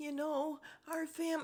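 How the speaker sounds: mock crying voice. Retelling how a cast member answered a question: imitating a put-on cry voice. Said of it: "she puts on this cry voice".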